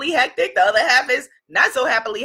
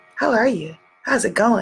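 serene, calm, composed, unbothered tone; 2 semitones lower than usual. Retelling a holiday visit to a friend's family: imitating quiet calm speech. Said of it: "speaking very quietly and very calm".

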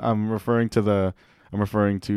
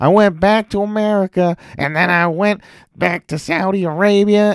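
put-on country accent, higher and louder; 10 semitones higher, 5 dB louder than usual. Imitating a wrestler's promo to the crowd: Seth Rollins impression in country accent. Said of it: "I'm having a country accent".

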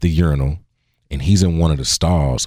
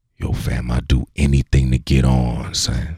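mock whispering; 2 semitones lower than usual. Retelling how a man leaned in face to face: imitating someone whispering. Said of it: "he whispers in my ear".

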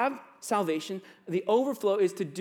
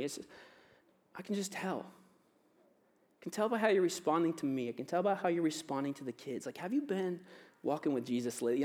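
gentle delivery, quieter than before; 4 semitones lower, 7 dB quieter than usual. A husband repeats how his wife checks on him, quoting his wife gently. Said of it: "she says it so gently".

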